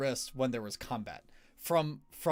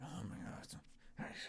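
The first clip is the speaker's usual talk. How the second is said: very soft, hushed, breathy, barely voiced whisper; 7 semitones lower, 18 dB quieter than usual. Describing the unintelligible whispers the characters hear: imitating whispering. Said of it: "whispering of, of, of people".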